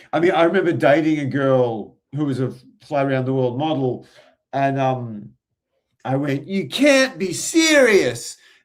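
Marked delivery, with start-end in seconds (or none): 6.4-8.3 pitched-up, drawn-out, protesting tone. Retelling a date, doing a John McEnroe impersonation. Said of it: "That was a John McEnroe impersonation".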